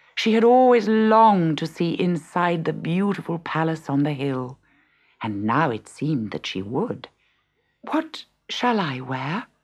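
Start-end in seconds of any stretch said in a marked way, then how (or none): 7.8-9.5 timid, soft delivery. Hoping to see the palace, a stepdaughter asks her stepmother's household, timidly. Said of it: "She asked timidly".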